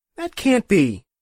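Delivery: very high, loud, adamant, insistent, protesting. Azure objects on hearing about the night of conception, insisting. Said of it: "Azure insisted".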